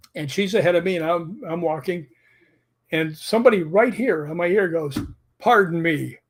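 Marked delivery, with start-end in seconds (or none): 5.3-6.1 put-on, slightly mad, annoyed voice. Retelling a voice heard right at one ear on a walkway: imitating someone saying it a bit mad. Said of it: "kinda mad".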